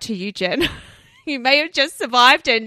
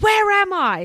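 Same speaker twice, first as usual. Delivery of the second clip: high-pitched, put-on shouted call; 7 semitones higher than usual. Retelling what a woman yelled out in a strange factory: imitating someone yelling. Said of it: "she yelled out".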